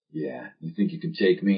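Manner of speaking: put-on, low-pitched voice. Recalling his younger self trying to talk in a put-on low voice. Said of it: "trying to talk like this".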